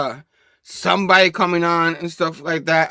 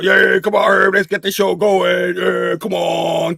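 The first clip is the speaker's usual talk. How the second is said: rough-edged, urging put-on character voice; 2 semitones higher, 4 dB louder than usual. Imitating a co-host urging the speaker to start the show: imitating Tom sounding like Verno. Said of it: "I don't know why I had to sound like Verno".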